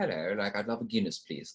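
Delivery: put-on practiced British accent. Retelling ordering at a london pub, practicing a british accent. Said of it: "practice our British accent".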